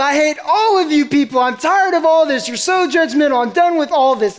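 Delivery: mock fed-up outburst, half-yelled, high and mild. Recalling standing up while the youth pastor preached: retelling a yell. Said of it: "just yelled".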